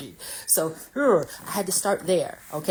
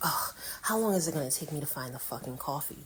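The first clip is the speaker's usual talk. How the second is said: put-on muttering under breath, quieter; 10 dB quieter than usual. Retelling walking into a grocery store looking for coffee: imitating muttering under breath. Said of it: "I'm saying under my breath".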